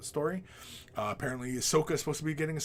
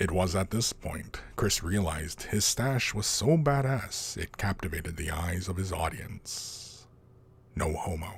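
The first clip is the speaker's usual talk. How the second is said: pitched way down, slow and unhurried; 7 semitones lower, 4 dB louder than usual. Into your mic, one final little thing about Chris and his audience, in a Morgan Freeman type voice. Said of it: "That's me doing a Morgan Freeman type voice".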